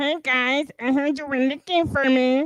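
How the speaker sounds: cartoon frog puppet voice. Imitating a guy from the video: Kermit the Frog voice.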